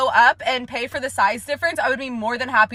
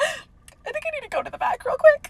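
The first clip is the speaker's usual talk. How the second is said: very high-pitched voice, cracking and breaking. Retelling calling out a drink at work: imitating own cracking voice. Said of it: "my voice is, like, cracking".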